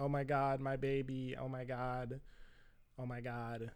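play-acted, very quiet, hushed, tearful, weepy lament. Retelling how the other mom cried on the phone: imitating mom crying. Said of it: "same thing".

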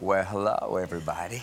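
put-on soothing bedtime-story voice. Retelling what the sleep app plays at night: Matthew McConaughey impression. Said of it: "It's me, Matthew McConaughey".

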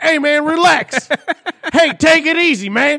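shrill, booming, very high, super loud voice. Joking about a commercial, imitating Daly's super loud inner voice. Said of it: "internal voice is like. Super loud always".

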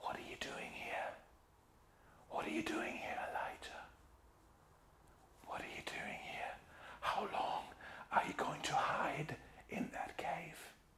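whispering. Voicing God speaking to Elijah hiding in the cave: whispering. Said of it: "I'm going to stop whispering now".

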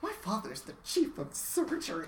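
very snippy, curt, high-pitched delivery. Retelling a scene where Jack answers a hotel worker: mock-snippy, as Jack. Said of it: "Jack gets very snippy and says".

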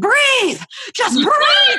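mock shrill yelling, voice way up high. Retelling a frightening moment, a speaker quotes their mom on the phone, imitating mom yelling. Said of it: "my mom is just yelling at me".

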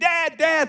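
high, excited yell. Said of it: "she was screaming".

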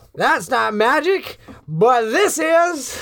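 very high, climbing, rising shout. Voicing a priest who yells while throwing a bag: priest yelling. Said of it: "you hear the priest yell".

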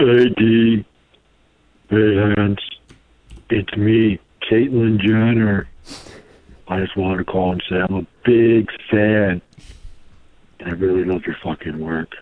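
deep, low-pitched voice. Calling in to the show, claiming to be a fan: deep voice. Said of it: "voice was so deep".

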